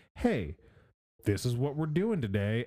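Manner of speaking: ordinary talk, nothing marked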